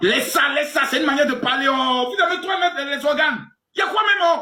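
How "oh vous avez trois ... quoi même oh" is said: shouting. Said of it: "Mais monsieur, crie pas".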